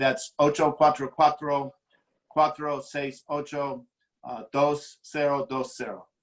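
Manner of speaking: non-native accent speaking Spanish. Reading a phone number aloud in Spanish: non-native Spanish accent. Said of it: "laughing at my Spanish accent".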